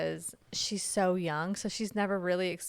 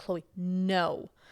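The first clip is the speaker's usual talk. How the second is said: put-on stern, firm tone. Retelling telling a toddler no at dinner: imitating a stern warning. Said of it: "very stern with her".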